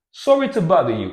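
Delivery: slightly British accent. Showing a learner a British-sounding way to say the phrase: a bit British-sounding. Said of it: "it sounds a little bit more British".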